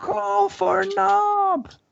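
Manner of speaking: very high, slow goblin yell.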